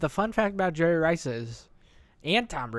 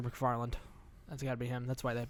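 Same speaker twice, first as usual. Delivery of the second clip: ordinary talk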